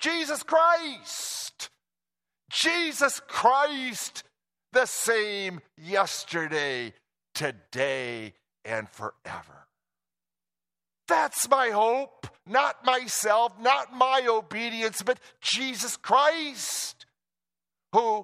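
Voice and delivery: put-on triumphant cry with swooping pitch. Sermon speaker voicing what the writer cries out, acting out a victorious cry. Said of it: "he cries out here with a victorious voice".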